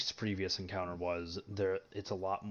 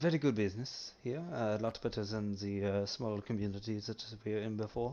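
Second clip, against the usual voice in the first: put-on Italian accent, tentative and still searching. Replying in character to another player, trying out an accent. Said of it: "I'm trying to find the accent".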